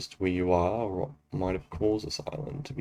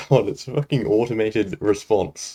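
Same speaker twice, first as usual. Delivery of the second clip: usual speaking voice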